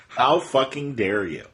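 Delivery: ordinary delivery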